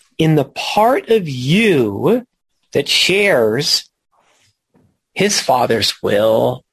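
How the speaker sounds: slow, deliberate reading. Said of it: "read that sentence slowly".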